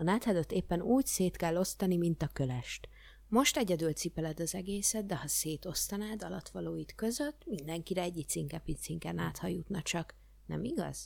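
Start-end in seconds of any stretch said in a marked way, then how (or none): none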